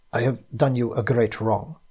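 ordinary talk

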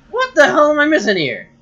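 very loud, very high yell with voice crack. Playing a game and demanding answers from it, voice cracking. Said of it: "as I have a voice crack".

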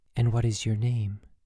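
gentle, softly spoken.

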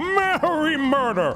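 jolly, merry voice pitched very high. Retrying a line to make the character more jolly, in a jolly Santa voice. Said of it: "He's gotta be a lot more jolly".

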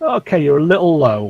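sarcastic, mocking delivery. Calling a landing approach to a pilot over radio: sarcastic. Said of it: "that's me being sarcastic".

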